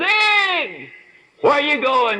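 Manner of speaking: acted very high, big, booming, drawn-out call. Retelling a friend calling out in a hotel lobby: booming voice of Bernie Lofchick. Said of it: "this booming voice of his".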